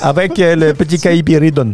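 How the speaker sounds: put-on Spanish accent, stage-magician patter.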